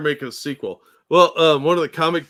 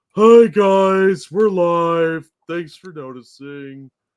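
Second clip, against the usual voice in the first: slow drawl with "guys" drawn out; 2 semitones higher than usual. Imagining a show intro read in a cartoon donkey's voice: Eeyore voice. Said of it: "followed by Eeyore's voice".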